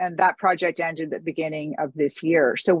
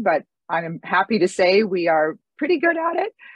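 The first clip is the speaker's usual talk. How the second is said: nervous, cracking, breaking voice, rising; 3 semitones higher than usual. Presenting her organization's grant work, the speaker's voice cracks with nerves. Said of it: "you hear my voice cracking with the nervousness".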